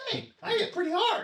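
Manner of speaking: squeaky, very high, loud little dragon voice. Voicing a little dragon boasting after its bite: voicing a little dragon. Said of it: "the little dragon looks at you and goes".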